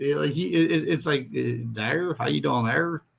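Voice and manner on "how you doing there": put-on Minnesota accent, Canadian-sounding, faster pace. Describing how Minnesotans sound, the speaker does a Minnesota accent. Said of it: "minor league Canadian accent".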